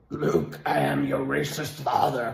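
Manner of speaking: soft, masked sci-fi dark-lord villain voice. Complaining about people recreating the speaker's voice, doing a Darth Vader voice. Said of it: "I sound like Darth Vader".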